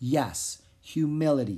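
ordinary delivery

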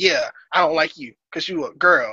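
plain

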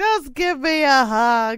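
high, loud, drawn-out play-acted crying throughout. Speaker recalling bawling from tiredness one morning when greeted: retelling crying. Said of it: "I just couldn't stop crying".

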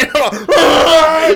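high, loud, helpless fit of laughter.

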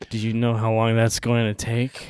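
acted flat delivery. Speaker recounting a favorite line, the guy's reply to him: mock deadpan. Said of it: "just deadpanningly saying".

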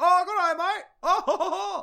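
loud, fake British accent over American voice. An actor, teasing British people about accents, puts on a mock British accent. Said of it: "if we just came over there and were like".

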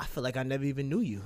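usual speaking voice

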